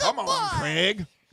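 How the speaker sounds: very high-pitched voice. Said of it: "Anytime you say Craig, it sounds like".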